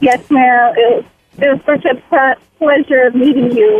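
anxious, nervous, halting, stumbling delivery. Thanking someone at the end of a call, nervous. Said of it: "I'm sorry I sound so nervous".

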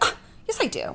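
whispered, breathy, touchy, defensive tone. Retelling a movie scene where she answers her husband: imitating a defensive reply. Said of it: "and is kinda defensive about it".

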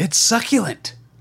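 over-the-top, way-too-energetic, high exclamation-packed delivery. Quoting how Peter said a line, imitating Peter's way-too-energetic delivery. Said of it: "like multiple exclamation points".

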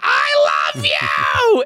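deep, very low, swooping, adoring, doting gush. Acting out a fan coming up to hug him: imitating an adoring fan. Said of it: "woman with a Chicago Cubs t-shirt on being like".

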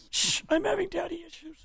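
very high, soft, hushed voice. Joking about the movie Contact: Jodie Foster impression. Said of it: "Is that your Jodie Foster impression?".

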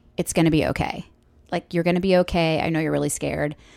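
ordinary talk

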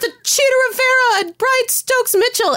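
loud, high-pitched screaming.

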